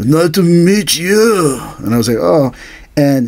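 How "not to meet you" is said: put-on elderly Korean man's accent, slow. Retelling meeting a friend's Hapkido master, in an old Korean man's accent. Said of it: "this old Korean guy talk like this".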